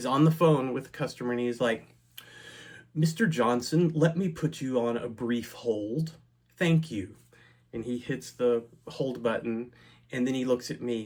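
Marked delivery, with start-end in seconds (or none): 2.9-7.1 cold, robotic, unfeeling machine-like voice. Telling about a man in a nearby cubicle on a customer call, imitating the Borg. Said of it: "talking like he's like the Borg".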